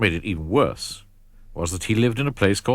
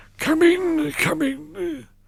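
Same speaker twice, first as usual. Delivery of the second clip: wheezy voice, much higher pitch. Narrator reading Doctor Plump greeting Mister Skinny at his door, Doctor Plump wheezing. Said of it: "he wheezed".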